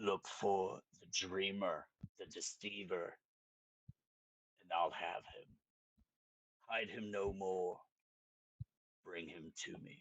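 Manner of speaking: raspy, hissing whisper echoing from deep inside. A game master voices a woman's voice echoing from the zombies' chests, raspy hissing whisper. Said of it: "a raspy voice".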